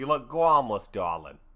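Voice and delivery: campy, over-the-top showbiz host voice. Joking about the word Gawmlis, the speaker does a Billy Crystal character voice. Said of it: "I'm doing that Billy Crystal character".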